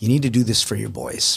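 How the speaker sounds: put-on whispering. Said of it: "I whisper in his ear".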